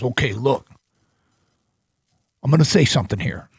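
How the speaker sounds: pausing, measured, deliberate windup delivery. Retelling an argument about a pitcher: Pat impression. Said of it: "I'm gonna do my Pat impression".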